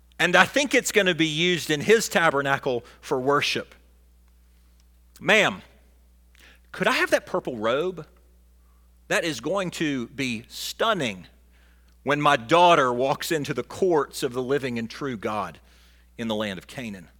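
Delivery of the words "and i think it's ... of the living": usual speaking voice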